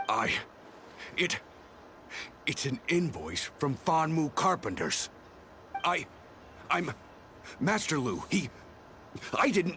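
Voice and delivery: high, nervous, halting stammer, voice cracking. Questioned about an invoice, a witness answers, stuttering. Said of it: "Stop stuttering already!".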